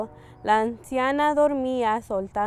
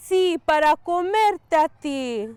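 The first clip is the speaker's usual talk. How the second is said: loud, high-pitched roaring wolf voice; 6 semitones higher, 5 dB louder than usual. Narrator reading the wolf's answer to the girl about its teeth, roaring wolf. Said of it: "Y el lobo rugió".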